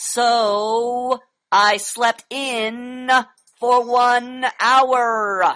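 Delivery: every vowel stretched, drawn-out "so". Reading a sentence aloud to show extending the vowels, drawn-out vowels. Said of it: "Listen to the way I'm reading it, and I am extending the vowels".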